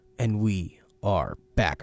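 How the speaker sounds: very low, very slow, very drawn-out delivery. Coming back from an ad message, the speaker says it very slowly. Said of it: "I don't know why I said that so slow".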